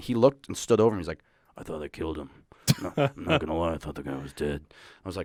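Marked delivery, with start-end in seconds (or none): 1.6-4.6 mild, soft-spoken, hushed voice. Retelling what Chuck said about a brawl: imitating Chuck's soft-spoken voice. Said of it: "he kinda talks like, like this, a little soft-spoken".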